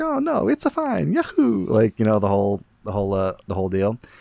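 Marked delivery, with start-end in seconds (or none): 0.0-1.7 cartoon Italian voice, much higher, slower. Retelling an actor's reply in a commercial scene, in a Mario voice. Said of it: "in his Mario voice is like".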